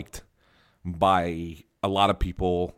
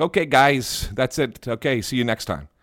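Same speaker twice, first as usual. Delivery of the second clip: bad, rough, not-quite-right Russian accent, pitched up; 6 semitones higher, 4 dB louder than usual. Ovechkin ends a post-game session at his locker once the questions are done, bad Ovechkin impersonation. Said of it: "Was that your Russian?".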